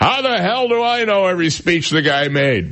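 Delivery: high-pitched put-on shout, temper snapping. Retelling how DeSantis lost it with the anchor: imitating someone yelling. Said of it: "started yelling at the anchor".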